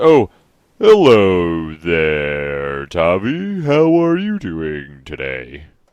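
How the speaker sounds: very slow, swooping talking-tree voice, "there" drawn out. Voicing a talking tree that greets Tommy: voicing a talking tree. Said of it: "the tree's, uh, face says".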